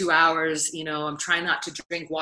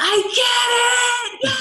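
put-on joyful scream, higher and louder; 7 dB louder than usual. Retelling overhearing a man during the ceremony: imitating a man screaming with joy. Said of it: "He was screaming, like".

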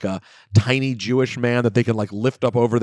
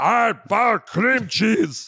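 very high, slow, drawn-out broken caveman speech; 11 semitones higher than usual. Acting out a cave woman offering cream cheese: imitating a barbarian cave woman. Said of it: "she speaks like barbarian".

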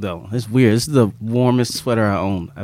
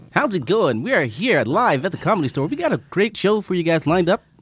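radio announcer voiceover delivery, pitched up; 9 semitones higher than usual. Host opening a live show at the Comedy Store, voiceover announcer voice. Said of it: "That's a good voice. Do you do voiceovers?".

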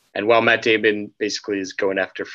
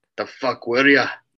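put-on Irish brogue accent; 3 semitones higher than usual. Quoting the Irish character from a movie scene: imitating an Irish accent. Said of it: "his accent is, is so great".

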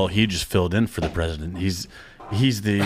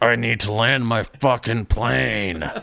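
very slow, heavy, deliberate, insistent, each word dragged; 2 semitones higher than usual. Joking about a movie president line: Harrison Ford impression. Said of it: "Harrison Ford being like".

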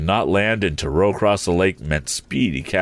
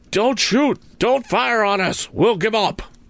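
shrill, very high, pleading outcry. A narrator reads a man in a boat calling to an armed man, crying out. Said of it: "said the tramp as he saw the brace. / he threatened. / cried [name]".

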